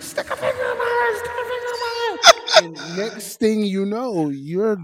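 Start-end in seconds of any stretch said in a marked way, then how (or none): 0.0-2.6 put-on very high, repeated scream. Retelling what she suddenly started screaming: imitating someone screaming. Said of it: "she starts screaming".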